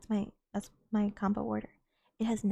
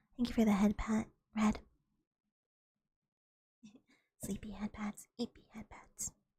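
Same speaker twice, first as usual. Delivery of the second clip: hushed, soft-spoken, quiet voice; 3 dB quieter than usual. Thanking someone in chat for a head pat, in a soft voice. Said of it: "my voice could get this soft".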